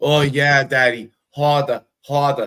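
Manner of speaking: awful put-on Boston accent. Retelling a night with a woman from boston: imitating a boston accent. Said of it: "that was the worst fucking accent".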